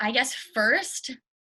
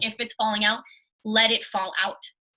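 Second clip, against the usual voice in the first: ordinary delivery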